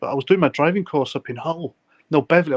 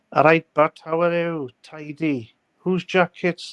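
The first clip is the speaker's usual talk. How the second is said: put-on South Wales accent; 3 semitones higher than usual. Asked to do his usual impersonation, doing a south wales accent impression. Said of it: "the South Wales um, impersonation that you do".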